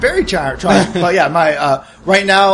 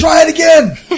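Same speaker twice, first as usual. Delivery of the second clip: acted yelling, higher and louder; 12 semitones higher, 5 dB louder than usual. Throwing a potted plant at a gloating enemy: screaming in character. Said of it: "and I'm screaming".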